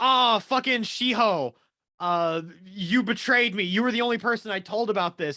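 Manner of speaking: acted, all-out frantic panicky outburst. Retelling a scene where a character freaks out: imitating someone freaking out. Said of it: "Kokorogi starts freaking the fuck out".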